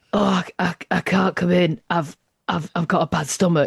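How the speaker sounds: fake sick voice, weak, as if voice is gone. Mimicking people who ring in sick to work, the speaker does a put-on poorly voice. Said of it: "why's your voice gone then?".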